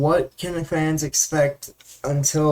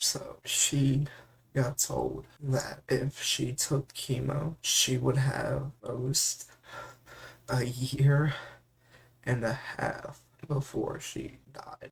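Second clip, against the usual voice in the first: whispery, breathy voice, struggling, holding back tears; 2 semitones lower, 11 dB quieter than usual. Telling viewers the worst news she got about chemo, struggling to keep it together. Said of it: "you can hear it in my voice, I'm struggling already to keep it together".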